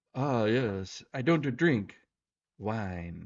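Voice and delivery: put-on heavy Eastern European accent, very slow, drawn out. Retelling a stranger's line from a story: thick eastern european accent. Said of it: "the thick East, uh, Eastern European accent".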